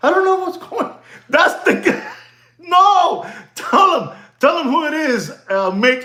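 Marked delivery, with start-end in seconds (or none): 0.0-1.0 baffled, confused, pitched-up, lost-sounding voice. Recalling a guy who was confused: imitating a confused man. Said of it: "He was confused".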